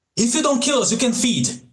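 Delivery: full-throated, shrieking scream, very high. Voicing his game character, shoving another character toward a gargoyle; screaming.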